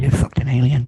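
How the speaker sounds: loud stage whisper from the background. Retelling a friend's remark during a film: imitating a friend's half-whisper. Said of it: "a whisper in the background".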